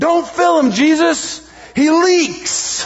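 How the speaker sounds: put-on shrill, very high, very slow drawn-out shout. Retelling a story of a woman in church: imitating a shout. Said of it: "she stands up and shouts".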